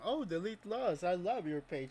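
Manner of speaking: mock sarcasm in every word. Repeating a cop's remark to question it: imitating a sarcastic tone. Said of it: "It sounded like a freaking sarcasm".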